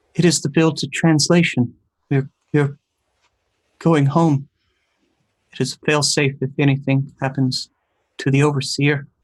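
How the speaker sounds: very scared, fearful, terrified voice. Narrating a voice the listener hears in their mind, very scared voice. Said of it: "you hear a very scared voice".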